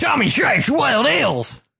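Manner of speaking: put-on Australian and Texan accent at once. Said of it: "Australian and Texan at the same time".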